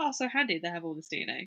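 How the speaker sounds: utmost, heavy, dripping sarcasm. Commenting on the DNA evidence in the case: sarcastic. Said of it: "Sorry, the way you said that".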